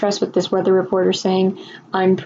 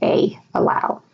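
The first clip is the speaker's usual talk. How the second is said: ordinary talk, nothing marked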